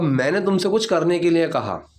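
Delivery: ordinary talk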